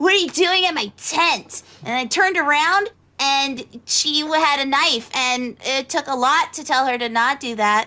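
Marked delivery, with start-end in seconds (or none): 0.0-1.6 rough, gruff delivery. Retelling a woman confronting them at her tent: retelling a gruff voice. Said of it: "suddenly I heard this gruff voice".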